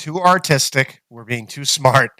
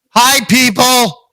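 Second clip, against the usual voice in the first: very high, shrill shouted yell; 9 semitones higher, 5 dB louder than usual. Greeting the people loudly when asked to yell at them: yelling a greeting. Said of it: "I am yelling".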